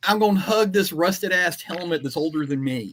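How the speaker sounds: mocking put-on little whiny complaining voice. Speaker acts out another person's words, in a mocking whiny voice. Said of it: "this little whiny little bitch".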